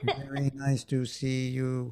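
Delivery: flat, slow, robotic sci-fi computer voice. Imagining a sci-fi movie person who talks like a computer: robotic computer voice. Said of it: "a person talk like a computer".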